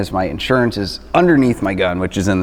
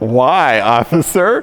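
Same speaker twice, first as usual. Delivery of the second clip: innocent tone, barely holding in a laugh; 5 semitones higher, 4 dB louder than usual. Retelling a traffic stop, answering the officer: imitating himself holding back laughter. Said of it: "on the verge of laughing".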